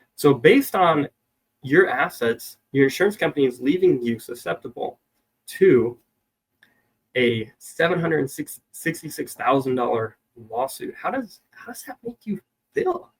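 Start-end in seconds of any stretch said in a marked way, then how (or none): 11.0-13.0 soft, breathy, curious and inquisitive tone. Demonstrating how to question a client, asking in a curious tone. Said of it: "I say that in kind of a curious tone".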